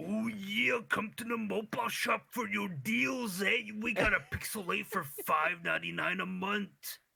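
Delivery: put-on voice, very high and rough. Retelling a joke about the store's loudspeaker: Macho Man impression. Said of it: "when I'm doing the impression".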